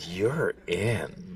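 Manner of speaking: mock flirtatious voice, very low, hushed and soft. Asked how John said it, repeating his words, imitating John's flirty voice. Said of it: "How would SpongeBob say it in that flirty voice?".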